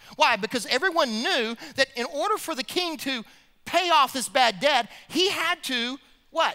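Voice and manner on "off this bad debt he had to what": ordinary talk, nothing marked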